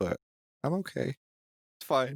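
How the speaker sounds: tiniest little shrunken voice. Speaker, left with nothing to do when the internet cuts out, insists he's fine, tiny little voice. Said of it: "in the world's like tiniest tiniest little voice".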